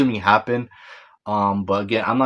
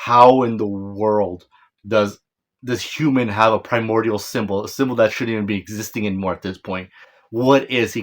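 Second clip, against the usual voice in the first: ordinary delivery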